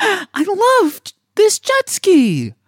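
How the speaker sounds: bright, upbeat, very high and swooping happy tone. Trying out an instruction to sound upbeat when happy: upbeat happy tone. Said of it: "Talk in an upbeat tone when you're happy and content".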